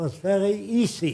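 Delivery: put-on heavy German accent, slow. Retelling a pilot's reply to the speaker's question: heavy German accent as Ernst Udet. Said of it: "He said in a heavy German accent".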